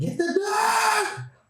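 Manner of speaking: all-out very high, shrill scream, "dog" stretched out. Retelling the husband mocking his wife: imitating a scream. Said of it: "it's straight scream".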